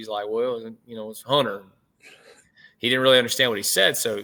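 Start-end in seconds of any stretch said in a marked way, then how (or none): 0.3-1.6 put-on Southern accent voice. Retelling an assistant's answer about his name: imitating a Southern voice. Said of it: "he's very South, you know, Southern voice".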